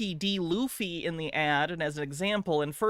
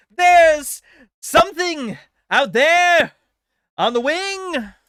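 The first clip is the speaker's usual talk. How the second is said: high, loud yell in full-blown panic; 12 semitones higher, 11 dB louder than usual. Redoing a line with more panic, panicked William Shatner voice. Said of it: "Shatner didn't deliver the line like that".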